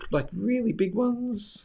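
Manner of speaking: voice cracking. Asking about major trend lines on a chart, voice cracking. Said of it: "As my voice cracks".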